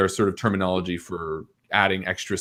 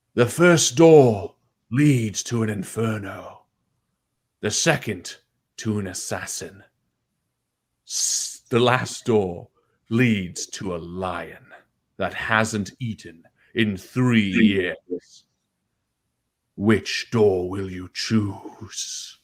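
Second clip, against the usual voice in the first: menacing, ominous, foreboding disembodied voice. In a locked dungeon, a voice from above offers three doors, ominous voice. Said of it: "an ominous voice speaks over top".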